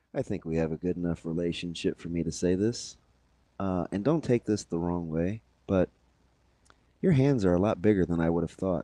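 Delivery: low, confiding voice. Retelling what Shafe said while shaking hands goodbye: imitating Shafe's lowered voice. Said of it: "he kinda lowered his voice".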